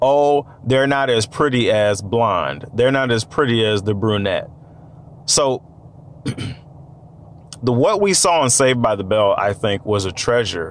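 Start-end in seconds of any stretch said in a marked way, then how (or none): none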